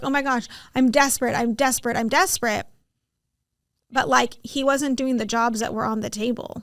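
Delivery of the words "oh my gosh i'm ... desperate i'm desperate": put-on desperate tantrum-like whine. Acting out how people throw a fit: mock fit-throwing whine. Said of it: "throw a fit and be like".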